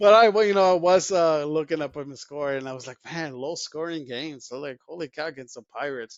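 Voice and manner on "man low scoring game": usual speaking voice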